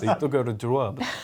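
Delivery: put-on Russian accent. Joking about a mock word in a quote, put-on Russian accent. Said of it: "with just a legitimate Russian accent".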